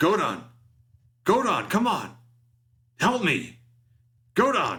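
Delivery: very high, frantic, swooping, drawn-out yelling. Narrating a game scene as Van and Doba calls to Godon, frantic yelling. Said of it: "he starts kind of frantically going".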